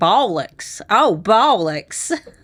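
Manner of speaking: put-on American southern drawl on "bollocks". Trading a word back and forth, now saying it with a southern twang. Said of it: "Say it with a with a southern twang".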